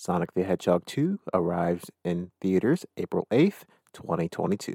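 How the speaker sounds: put-on butter-smooth, rich buttery voice. Announcing a movie's theater release date in a buttery voice. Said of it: "just say with my buttery voice".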